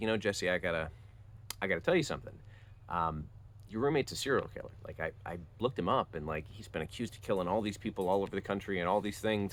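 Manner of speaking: normal talking voice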